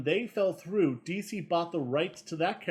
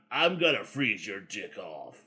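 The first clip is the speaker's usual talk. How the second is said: very low, deep, gruff and angry villain voice; 7 semitones lower than usual. Speaker shows how the villain should sound to them: gruff angry Captain Cold voice. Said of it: "He is gruffy. He is angry".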